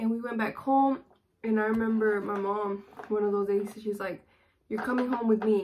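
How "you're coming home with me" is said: imitated angry voice. Retelling the mom ordering her home: imitating angry mom. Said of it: "she was very angry".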